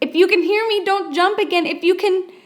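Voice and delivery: very urgent, very high-pitched voice. Reading a story aloud, a girl calling to a fallen boy: very urgent voice. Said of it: "in a very urgent voice".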